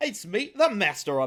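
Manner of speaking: put-on cockney accent. Retelling a comic scene where Magneto greets his acolytes: big Cockney accent as Magneto. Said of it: "puts on the big Cockney accent".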